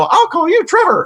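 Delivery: put-on very high, patronizing, condescending tone. Mimicking the woman in a vr video, mock-condescending voice. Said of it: "in this almost condescending voice".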